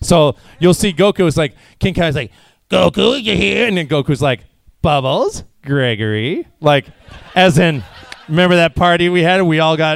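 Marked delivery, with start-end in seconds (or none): 4.8-6.5 put-on knowing, suggestive tone with swooping pitch. Retelling a scene recalling a debaucherous party: mock-suggestive tone on names. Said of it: "I always try to say their names with a double entendre or a subtext".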